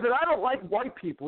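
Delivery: mildly irritated, a bit upset delivery. Retelling a stranger's reply on first meeting: imitating someone a little upset. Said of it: "a little upset".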